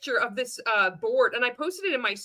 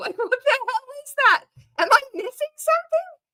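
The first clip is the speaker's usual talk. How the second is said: very high pitch, climbing higher and getting louder; 13 semitones higher, 6 dB louder than usual. Reacting to a post shared in a sales group: voice rising higher and higher. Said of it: "my voice is getting up higher and higher".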